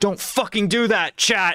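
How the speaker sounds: high-pitched mock scolding tone.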